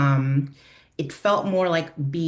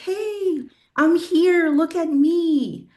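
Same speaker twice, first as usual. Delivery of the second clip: play-acted very high scream, "me" stretched long; 13 semitones higher than usual. Retelling a dream of being a leaf as people passed by: imitating a scream. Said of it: "and I was screaming, like".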